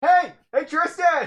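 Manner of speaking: high, loud call. Acting out calling to a player across the room: imitating shouting across a room. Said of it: "Shout twenty feet over there?".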